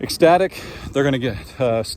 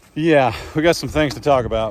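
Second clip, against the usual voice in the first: ordinary delivery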